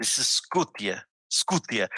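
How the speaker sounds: Slavic-style pronunciation. Teaching how to pronounce a name, Slavic pronunciation. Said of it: "the Slavic way of pronouncing this is Skutia".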